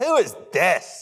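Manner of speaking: scornful, appalled, contemptuous tone. Imagining being in the city and asking in mock-contemptuous dismay. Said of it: "There's a dismay, a contemptuousness".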